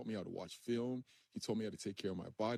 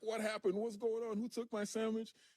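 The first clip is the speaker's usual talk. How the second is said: put-on angry yell, much higher and faster; 2 semitones higher, 4 dB louder than usual. Retelling a prank on Strahan, imitating Strahan's angry shout. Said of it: "he is irate. He's so angry".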